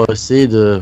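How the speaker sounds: usual speaking voice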